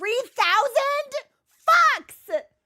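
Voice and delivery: very high, loud, shrill, thrilled excited yelp. Reading a big donation of three thousand aloud: excited yell. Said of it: "it sounded like I yelled "fucks,"".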